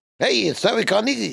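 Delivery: Catskills comedian voice.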